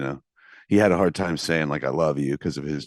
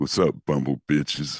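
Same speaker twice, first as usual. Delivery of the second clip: exaggerated, extra low deep voice. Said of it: "we can go deeper".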